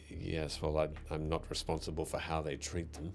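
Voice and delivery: muttering under breath. Stirring a big cauldron without looking back, she mutters under her breath. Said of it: "she just mutters under her breath".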